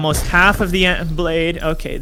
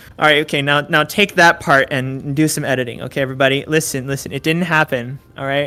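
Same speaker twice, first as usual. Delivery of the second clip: ordinary talk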